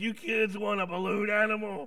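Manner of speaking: rough, raspy, smoke-worn voice. Retelling what a man asked the kids, in a rough, smoky voice. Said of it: "he had a rough, smoky voice".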